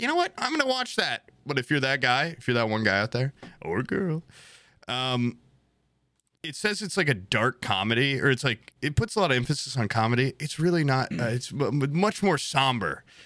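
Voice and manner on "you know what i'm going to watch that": very high, mock-eager voice. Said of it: "no one ... is like".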